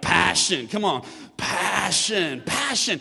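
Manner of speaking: passionate, with a grunt. Leading a church, the speaker shows how to say the word: passionate, with a grunt. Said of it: "got a little grunt in there".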